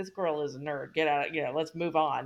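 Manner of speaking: whispered delivery. Retelling what a girl whispers in someone's ear: imitating a whisper. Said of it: "whispers in his ear".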